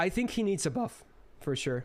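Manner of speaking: voice breaking mid-line. Discussing whether a game character needs a buff: voice cracking. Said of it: "That voice crack was massive though".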